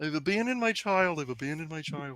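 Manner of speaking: soft, murmured, small puppet frog voice. Imitating Robin in a Muppet movie scene: Robin voice. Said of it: "as Robin just being like".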